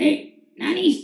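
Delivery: put-on slurred drunk voice, high and rough. Recalling a friend who was always drunk greeting the speaker: imitating Rudy's drunk voice. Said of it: "I always heard his drunk voice".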